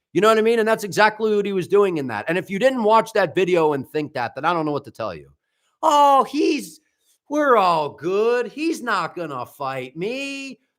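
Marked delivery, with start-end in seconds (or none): 5.8-10.5 put-on smug, self-satisfied, very drawn out, pitched up. Imitating someone's words from a video: imitating Gary's smug tone. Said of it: "that's a smug tone".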